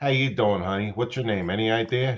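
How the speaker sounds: put-on wiseguy voice. Showing the others the line he uses, in a wannabe Guido voice. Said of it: "got that inner wanna be a Guido".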